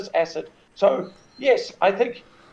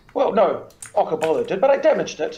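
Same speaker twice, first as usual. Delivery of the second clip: plain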